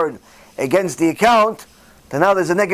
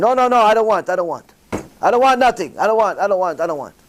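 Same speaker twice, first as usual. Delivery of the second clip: put-on crying woman's voice, tearful; 2 semitones higher than usual. Retelling a lady refusing the bank president's money: imitating a crying woman. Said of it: "She's crying".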